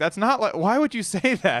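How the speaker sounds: play-acted shrill, very high, loud yelling outburst. Retelling own reaction to something said: imitating own yelling. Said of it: "I just started yelling".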